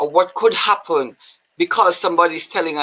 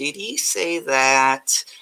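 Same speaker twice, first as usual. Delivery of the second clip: slow, drawn-out, silly character voice; 3 semitones lower than usual. Asking whether God really said it, in an Urkel voice. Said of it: "in your best Urkel voice".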